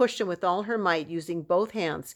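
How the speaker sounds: ordinary delivery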